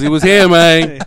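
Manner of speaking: put-on thick, laid-on Boston accent, loud and high. Still going on about the same guy, in a thick Boston accent. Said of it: "Why is he doing the perk?".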